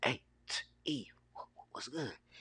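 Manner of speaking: soft, hushed whisper with halting, stammering starts. Acting out the serpent greeting Eve from the tree: whispering. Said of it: "it whispered to her".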